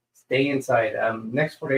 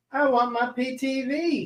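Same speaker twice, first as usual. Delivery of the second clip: high-pitched Southern-sounding accent; 12 semitones higher, 3 dB quieter than usual. Reading out names of those joining the show, with a Southern-sounding accent. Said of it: "Why did I sound like I was from the South?".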